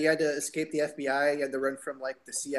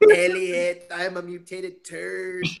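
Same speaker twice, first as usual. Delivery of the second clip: very slow, very loud, drawling alien voice; 5 semitones higher, 8 dB louder than usual. Joking about the alien from the movie: E.T. voice. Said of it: "she doesn't like the alien".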